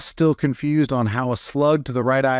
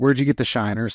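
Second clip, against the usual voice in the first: ordinary talk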